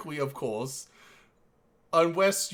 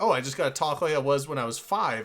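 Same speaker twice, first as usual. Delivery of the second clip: ordinary delivery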